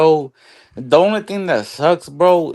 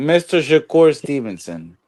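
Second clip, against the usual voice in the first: ordinary talk, nothing marked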